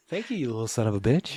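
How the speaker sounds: voice used for talking to a pet. Retelling what she says to an animal, in a talking-to-an-animal voice. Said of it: "in that voice as you do when you're talking to an animal".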